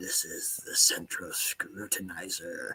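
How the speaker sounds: hushed, slow whisper with megaphone sound. Imitating the album's narrator, a government employee: hushed Central Scrutinizer voice. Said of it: "speaking kind of in a hushed voice through a megaphone".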